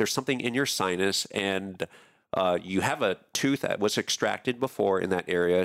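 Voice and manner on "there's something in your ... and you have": ordinary delivery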